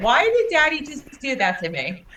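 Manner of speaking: high, swooping, complaining little talking-cat voice. Talking to the cat Juicy, the speaker answers for the cat, voicing Juicy.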